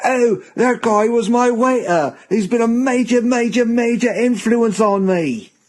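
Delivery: very high, very slow, drawn-out silly English voice. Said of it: "that stupid English voice supposed to be me".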